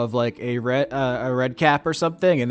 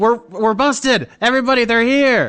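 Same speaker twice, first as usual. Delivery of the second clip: squealing, shrill, very high-pitched alarmed yell; 11 semitones higher, 7 dB louder than usual. Voicing a fairy creature who spots an intruder: yelling. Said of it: "the Cymbaline starts yelling".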